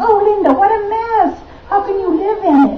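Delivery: high, shrieking, scolding scream.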